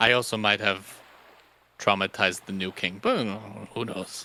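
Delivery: soft, stage half-whispered aside. Voicing a character about to board a ship, half-whispering to himself. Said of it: "he's just kinda gonna whisper to himself".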